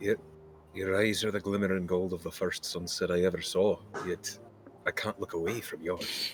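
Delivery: soft, quiet whisper murmured under the breath. Voicing Wake, who leans forward and whispers to Priya: Wake whispering. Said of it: "he whispers to you".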